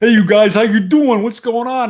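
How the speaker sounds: very high, loud tough-guy voice called out. Acting out your own past voice heard on a tape recorder, sounding like Rocky. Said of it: "sounds like Rocky and you know Stallone in Rocky One".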